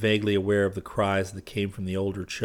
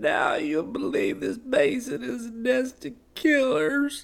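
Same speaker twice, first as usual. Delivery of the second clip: very high, slow, fading, dying, drawn-out words. A dying woman speaks her last words, slowly. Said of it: "she began slowly".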